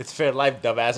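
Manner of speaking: ordinary talk, nothing marked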